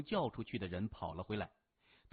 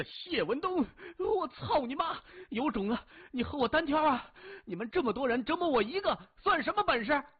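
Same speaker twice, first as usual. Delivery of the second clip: very high-pitched, loud, screamed, abusive cursing; 14 semitones higher, 5 dB louder than usual. A tortured captive with a tube in his thigh, cursing his captor loudly. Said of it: "张嘴大骂".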